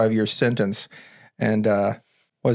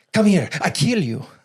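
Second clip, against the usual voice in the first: put-on Mexican accent, pitched up; 8 semitones higher than usual. Imitating a killer's threat while others laugh: imitating in a Mexican accent. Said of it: "You had to do the Mexican voice".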